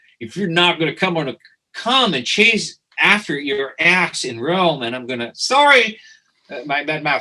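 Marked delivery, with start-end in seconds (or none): 0.2-4.8 put-on speaking with New York accent. Retelling Kenny Schaefer's reply to 'I don't want to go', imitating Kenny Schaefer, New York accent. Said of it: "with a New York accent".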